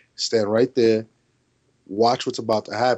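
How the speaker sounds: usual speaking voice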